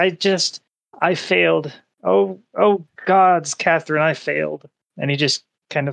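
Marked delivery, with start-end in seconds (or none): 0.0-4.7 ugly crying, hard sobbing, much slower. A parent raising a daughter alone speaks to catherine, ugly crying. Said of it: "He's pretty much ugly crying".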